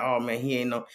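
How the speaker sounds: ordinary delivery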